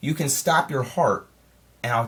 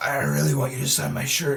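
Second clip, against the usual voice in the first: imitated creepy-sounding voice. Retelling a movie scene, quoting a fan at a signing: imitating a creepy guy talking. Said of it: "Why are you talking like that".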